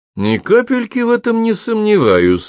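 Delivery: very high, swooping, openly derisive mockery. Narrator reading a major cutting into a conversation, openly mocking. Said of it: "с явной издевкой произнес".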